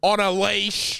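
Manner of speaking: slow, drawn-out, snide tone. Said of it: "Like that".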